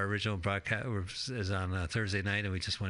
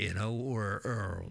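usual speaking voice

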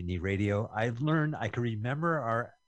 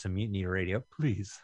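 fake desperate, pleading tone; 3 semitones lower than usual. Asking listeners to donate to Mutiny Radio, in fake desperate pleading. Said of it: "I did that like desperate".

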